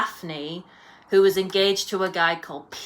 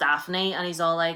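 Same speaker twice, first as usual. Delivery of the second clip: normal talking voice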